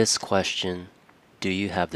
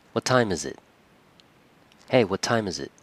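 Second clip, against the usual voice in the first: slightly aggressive, pushy tone, faster. Demonstrating again the tone of a question about the time, a little aggressive. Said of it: "It sounded a little aggressive".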